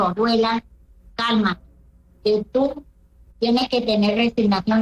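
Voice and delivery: ordinary talk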